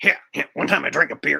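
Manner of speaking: mock dim-witted cartoon teen voice. Doing a Beavis and Butthead bit, answering Butthead's question, Beavis voice. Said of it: "a Beavis and Butthead impression".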